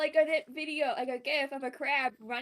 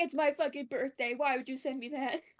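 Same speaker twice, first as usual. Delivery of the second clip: usual speaking voice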